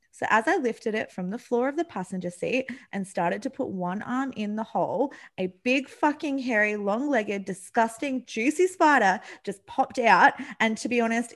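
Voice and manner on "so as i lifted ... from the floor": plain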